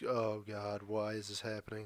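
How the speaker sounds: mimicked flat, dull tone. Retelling how everyone sounded after the first fifteen minutes; imitating everyone's dull tone. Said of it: "Literally like that tone".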